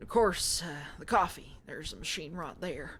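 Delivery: put-on low, folksy rural country accent. Voicing a character in a game, giving this guy a country accent. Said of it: "I'm giving this guy a country accent".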